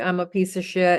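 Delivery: ordinary delivery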